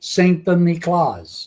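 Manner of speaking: put-on name given an Italian accent. Retelling a story, the speaker says the saint's name as Lorenzo would, Lorenzo's Italian accent. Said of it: "pronounces Saint Nicholas with an Italian accent".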